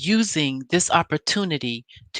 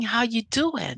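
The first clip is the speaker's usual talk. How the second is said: put-on smooth voice, much higher pitch; 6 semitones higher, 5 dB quieter than usual. Speaker recaps Martell walking in and greeting Mel, imitating Martell's smooth talking. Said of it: "smooth talking".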